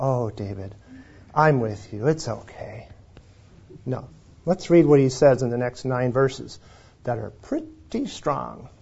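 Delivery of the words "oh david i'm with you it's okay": low, soft, sweet, soothing reassuring voice. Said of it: "God doesn't sweetly just say".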